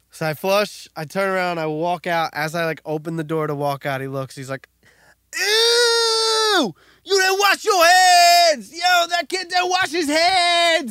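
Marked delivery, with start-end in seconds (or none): 5.3-10.9 put-on very high, shrill, drawn-out drunk-sounding scream. Retelling what a loud guy in the bathroom shouted: imitating a screaming drunk guy. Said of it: "And he's screaming it".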